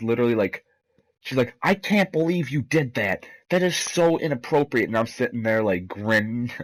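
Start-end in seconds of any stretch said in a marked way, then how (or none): 1.6-4.9 put-on high, freaked-out outburst in disbelief. Retelling a teacher's reaction to misbehavior: imitating Missus Smeets freaking out. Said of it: "she is freaking out".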